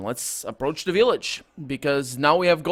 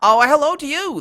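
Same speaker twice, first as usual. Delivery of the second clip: high, chirping, chirpy little fairy-creature voice; 11 semitones higher, 7 dB louder than usual. Narrator voices a tiny clawed creature replying to a greeting, chirping creature voice. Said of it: "the creature replies, chirping".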